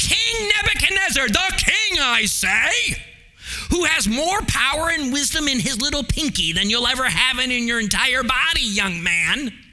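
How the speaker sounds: indignant scolding tone. Voicing her words to the king, in an indignant mother-in-law voice. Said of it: "with that indignant mother-in-law voice".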